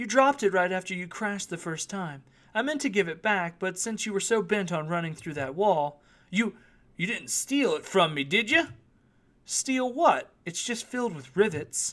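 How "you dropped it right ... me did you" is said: coolly teasing, unbothered, nonchalant insinuating tone. A fortune teller holds a bag she found and questions him about whether he took something from it. cool and teasing. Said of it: "The gazelle shifted her eyes and squinted, / Her blue eyes spoke like an insinuating whisper. / She remained perfectly cool, / She remained perfectly cool, observing him with a nonchalant expression".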